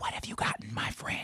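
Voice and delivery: soft, hushed whisper, close to the microphone. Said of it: "you gotta whisper and into the microphone".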